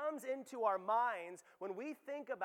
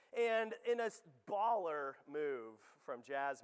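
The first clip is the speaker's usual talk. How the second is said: normal talking voice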